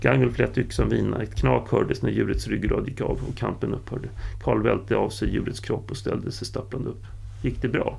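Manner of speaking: ordinary delivery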